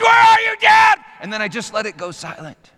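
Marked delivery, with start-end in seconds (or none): 0.0-1.0 piercing scream, very high and loud. Retelling a son screaming in dark sewer pipes: imitating Coleman screaming. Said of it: "He screamed".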